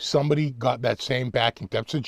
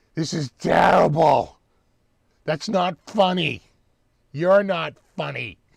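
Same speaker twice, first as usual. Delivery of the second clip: acted, exasperated, fed-up yelling; 4 semitones higher than usual. Retelling a bad comedy act on tv, imitating screaming at the screen. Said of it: "screaming at the screen".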